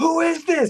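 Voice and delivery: high-pitched, shrill, loud shouting. Retelling quizzing a girlfriend on a random character: imitating yelling a question. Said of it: "why are you ye-, yelling at me?".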